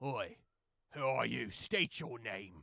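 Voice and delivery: stock pirate voice, demanding, calling out. Voicing pirates who challenge a stranger stepping into view: voicing a pirate. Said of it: "the pirates are like".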